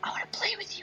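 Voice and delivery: hushed, creepy, very quiet whisper. Retelling a VR game moment when she comes up behind: imitating a whisper. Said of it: "when she whispers".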